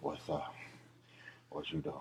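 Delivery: groggy, deep, hushed voice, almost whispered. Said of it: "sounding like [name] on the phone".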